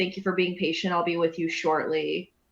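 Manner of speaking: ordinary talk, nothing marked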